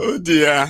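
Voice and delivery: talking through laughter. Laughing at a clip, apologizing: laughing while talking. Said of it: "see me laughing that way".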